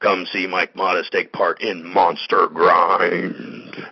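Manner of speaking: horrible, loud, fake monster voice. Reading a wrestling event announcement, in a bad monster voice. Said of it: "my monster voice is horrible".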